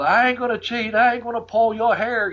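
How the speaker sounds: playful, high-pitched mocking jeer. Retelling how he yelled from the ring holding the ropes up, retelling a mocking taunt. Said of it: "just fucking mocking me".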